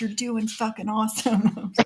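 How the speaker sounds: put-on whispering. Retelling what her husband said during the show: imitating husband whispering. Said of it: "whispering to me with his thumbs up".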